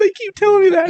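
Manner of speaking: put-on very high-pitched, whining little kid voice.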